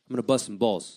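put-on Italian-American tough guy accent. Listing Italian appetizers, the speaker slips into an Italian-American tough guy accent. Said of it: "My tough guy".

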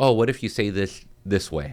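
ordinary talk

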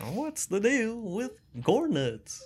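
very high-pitched voice swooping up and down. Repeating a co-host's joke line: Jerry Seinfeld impression. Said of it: "like Jerry Seinfeld".

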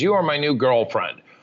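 ordinary delivery

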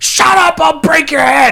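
shrill, very high, loud scream. Recounting a favorite funny movie scene, retelling a scream. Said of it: "he screams at him".

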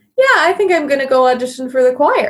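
breezy, casual remark. Retelling what they said to their dad about a choir audition: imitating own really casual tone. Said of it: "saying really casually".

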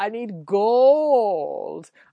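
crazy villain voice, word gold drawn out. Recapping a movie, doing a Goldfinger impression. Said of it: "This calls for a Goldfinger impression".

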